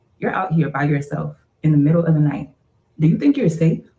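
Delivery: very calm, steady, low voice. Retelling what a stranger said to a woman out at night: imitating a calm, low voice. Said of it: "in a very calm and low voice says".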